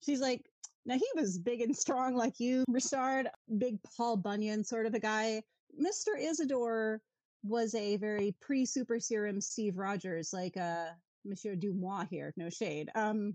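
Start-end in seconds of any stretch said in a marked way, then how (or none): none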